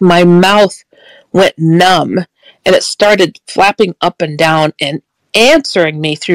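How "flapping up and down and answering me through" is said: normal talking voice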